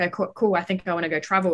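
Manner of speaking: usual speaking voice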